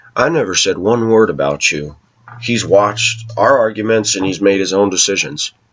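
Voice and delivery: normal talking voice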